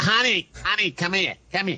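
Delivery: put-on very high-pitched, chain-smoking old lady voice. Joking along about an old lady who smokes: old lady smoker voice. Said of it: "Lady that's been smoking a lot".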